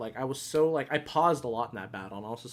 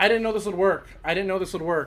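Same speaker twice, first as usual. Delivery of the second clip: fast, high, rattled, frantic panicked babble; 7 semitones higher, 8 dB louder than usual. Reacting as an unexpected game move works: panicking. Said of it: "I'm panicking".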